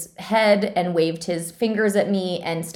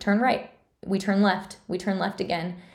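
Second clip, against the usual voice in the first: mock sure-voiced, confident, steady, unshaking delivery; 4 dB quieter than usual. Retelling giving directions home as a kid, retelling confident, steady directions. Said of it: "confidently, without a shake in my voice".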